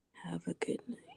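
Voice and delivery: soft, unvoiced whisper.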